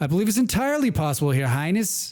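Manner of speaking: put-on Boston accent slipping in and out. In a role-play scene, answering your highness, in a patchy boston accent. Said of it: "coming in and out of that Boston accent".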